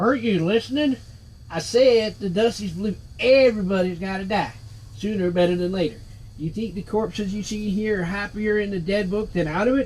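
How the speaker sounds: put-on drawling Texas accent. Voicing a game character who answers the player's question, in a Texas drawl. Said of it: "Who was the floating skull named [name] when he was alive? / They'll appreciate man with our kind of death experience. / Seems to me like I ended up going to like a Texas drawl or something like that".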